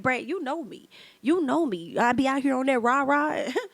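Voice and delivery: put-on full, forceful tone. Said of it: "He had enough girth".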